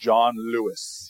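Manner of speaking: slow, deliberate, pointedly stretched, needling drawn-out delivery. Retelling how a friend named his TV pairing: imitating someone saying it slowly. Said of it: "he says it real slow".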